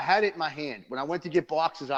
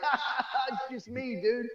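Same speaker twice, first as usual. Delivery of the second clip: mock teasing laugh-talk, very high and drawn-out; 9 semitones higher than usual. Retelling how Cravata laughed at a podcast fan mix-up: imitating Cravata laughing. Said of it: "But Cravata started laughing".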